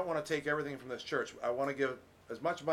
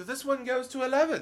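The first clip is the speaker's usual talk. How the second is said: very high, loud, horrible put-on British accent; 11 semitones higher, 6 dB louder than usual. Retelling a movie scene, a man answering a question: horrible British accent. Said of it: "That's my horrible British accent".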